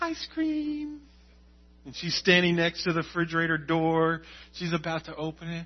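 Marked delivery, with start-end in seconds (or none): 0.0-1.0 put-on very high, soft, sweet little-girl voice. A father acts out his little girl begging at the fridge: Charlie's high sweet voice. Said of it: "And it's real high pitch".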